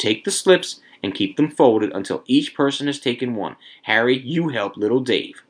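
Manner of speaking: ordinary delivery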